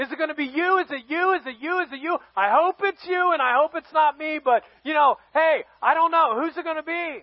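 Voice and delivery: acted, hopeful, eager and excited buzzing chatter. Retelling tribe members looking at each other before the king is named, acting out excited crowd. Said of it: "they're all excited".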